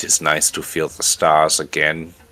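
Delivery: put-on thick, heavy German-accented English. Quoting a man's words in a story: heavy German accent. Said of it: "in heavily accented German English".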